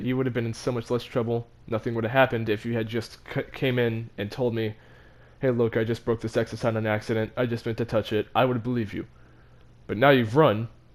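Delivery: plain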